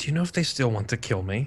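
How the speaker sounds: put-on quiet, hushed stage whisper. Retelling how a character asked around the corner: imitating a quiet stage whisper. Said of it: "he asked me with that, ... kinda says it, like, quiet enough".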